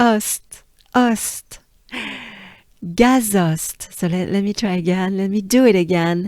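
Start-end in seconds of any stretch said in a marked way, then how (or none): 0.0-3.9 "gazost" said French-style with open o. Showing learners how to pronounce a place name: french accent. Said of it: "but with a French accent".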